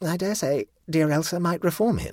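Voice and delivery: deeply unsure, high, doubting musing tone. The Baroness, holding a framed photograph, adds another remark: even more doubtfully. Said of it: "adding even more doubtfully".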